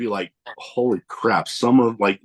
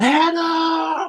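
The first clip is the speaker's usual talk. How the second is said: mock very high, long stretched-out shout. Retelling a shout from the crowd at a wrestling show: retelling a yell. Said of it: "I just yelled out".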